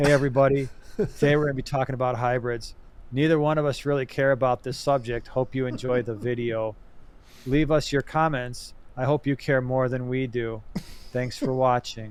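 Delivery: bored, indifferent, checked-out, uncaring monotone. Podcast host mocks an intro by hosts who don't care: bored, uncaring tone. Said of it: "If we talked in that tone of voice".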